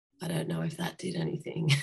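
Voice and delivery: soft, breathy, hoarse, rasping croaky voice. Retelling the morning after a hoarse night, acting out a croaky voice. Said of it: "I just had a croaky voice and was like".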